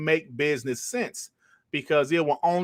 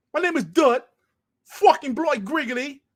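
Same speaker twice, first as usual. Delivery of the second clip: fake British accent, pitched very high; 13 semitones higher, 3 dB louder than usual. Joking about acting like someone from the UK: fake British accent. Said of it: "my fake British accent".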